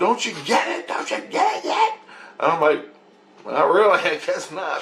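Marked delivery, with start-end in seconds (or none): 0.0-1.9 very high, insistent, urgent put-on screaming cry. Recounting a dream, speaker acts out his wife's words, imitating her screaming. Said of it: "she's screaming".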